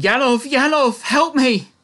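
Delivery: very high, loud, desperate howling scream. Voicing a staggering, howling character calling her companion: screaming for help. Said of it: "starts screaming".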